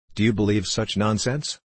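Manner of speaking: ordinary delivery, nothing marked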